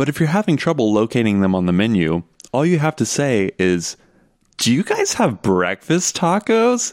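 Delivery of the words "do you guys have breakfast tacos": play-acted, very high, shrill, swooping, loudest-possible shout. Recounting an order at a Tex-Mex brunch, asking in the loudest voice possible. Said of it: "In the loudest voice possible".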